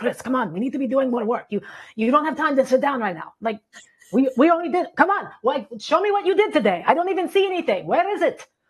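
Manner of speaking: put-on Slavic-accented gym coach voice. Describing a voice in their head that pushes them to work, in a Slavic gym coach voice. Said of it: "he kind of looks like a Slavic gym coach because that's what he sounds like".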